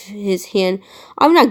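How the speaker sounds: ordinary delivery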